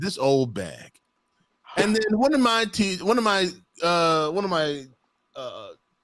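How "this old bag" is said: soft, grumbled mutter under the breath. Retelling an insult said about a teacher: imitating muttering under breath. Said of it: "under my breath".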